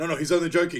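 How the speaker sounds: hurried, loud, high-pitched protesting tone.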